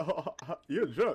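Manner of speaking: amused, chuckling, speaking through laughter. Retelling what his wife said while laughing at him: imitating wife laughing. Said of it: "She was laughing at me".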